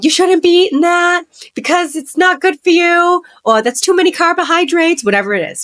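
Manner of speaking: put-on Italian-American accented speech. A speaker describing a relative policing food at family dinner, in an Italian-sounding accent. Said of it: "Italian accent that just came out?".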